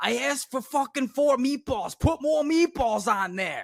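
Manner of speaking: mock furious screaming rant, shrill and very high. Retelling a customer yelling at a sandwich maker: imitating a man screaming. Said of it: "this guy just fucking screaming at the".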